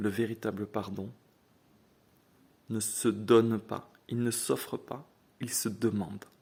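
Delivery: very slow, deliberate, each clause drawn out. Speaker explaining a point to a listener, speaking very slowly. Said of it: "je vais parler très lentement".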